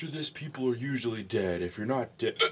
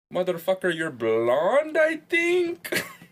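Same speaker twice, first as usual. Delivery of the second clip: loud, swooping, terrible fake Russian accent; 8 semitones higher, 9 dB louder than usual. Asked to speak with a Russian accent during a drinking game, Borat-like fake Russian accent. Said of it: "That's not Russian. That's like Borat".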